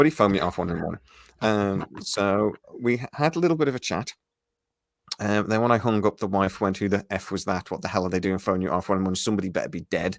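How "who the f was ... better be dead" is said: usual speaking voice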